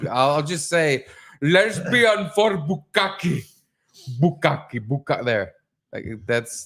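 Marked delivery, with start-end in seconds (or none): 1.4-5.2 put-on Indian accent, slow and pitched up. Saying requested words for a listener who likes hearing them, in an indian accent. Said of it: "say certain words in an Indian accent".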